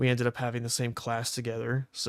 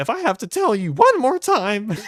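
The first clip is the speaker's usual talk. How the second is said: acted-out shrill outburst, voice cracking, very high, loud; 11 semitones higher, 12 dB louder than usual. Retelling how a man got mad at a friend: imitating angry voice cracking. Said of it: "his voice would start cracking".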